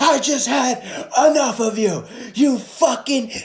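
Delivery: high scream at the top of his lungs. Retelling a man in the poker room who had had enough: imitating someone screaming. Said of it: "he's just screaming at the top of his lungs".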